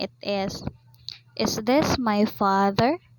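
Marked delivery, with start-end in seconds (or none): 1.4-3.0 pitch rising at the end on father. Intonation lesson contrasting statement and question: rising intonation on 'father'. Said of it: "While in the rising intonation".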